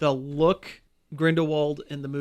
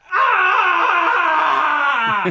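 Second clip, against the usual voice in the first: very high, very loud, shrill, drawn-out wailing ah; 9 dB louder than usual. Mocking a cartoon's voice acting, imitating Professor X screaming. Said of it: "constant screaming".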